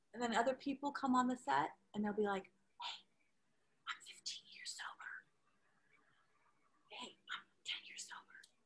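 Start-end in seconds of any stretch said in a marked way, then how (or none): 2.4-8.3 very quiet, slow, hushed whisper. Speaker acts out people on set sharing their years sober, imitating whispering. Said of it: "why are you whispering?".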